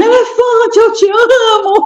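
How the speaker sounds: mock ecstatic shriek, very high and drawn out. Retelling how she screamed at an elephant sanctuary, retelling a scream.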